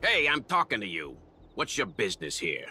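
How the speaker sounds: put-on New York accent. A character demands to know someone's business here, New Yorker accent. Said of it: "Why did he suddenly have a New Yorker accent".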